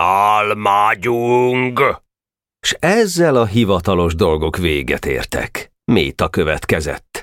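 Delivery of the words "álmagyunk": yelling, bellowing, much higher. The Slovak man, imitating the laughing boys, throws his hat in the air: yelling. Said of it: "levegőbe dobta a kalapját és ordított".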